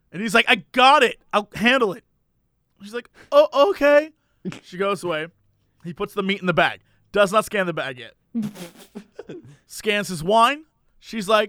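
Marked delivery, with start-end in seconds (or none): 3.3-4.1 put-on slow elderly woman voice with German accent. Retelling a store story, playing the woman asking a customer for ID, older lady with German accent. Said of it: "older lady who's sort of has a German accent".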